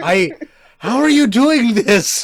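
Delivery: very high, very slow, loud, booming, drawn-out yell. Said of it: "he's yelling it".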